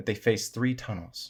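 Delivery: ordinary delivery, nothing marked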